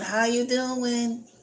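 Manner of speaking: high-pitched, mock hollering yell. Retelling how the doctor's office staff greet people: imitating staff yelling. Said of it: "they yelling".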